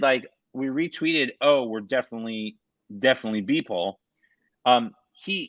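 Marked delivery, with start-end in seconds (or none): none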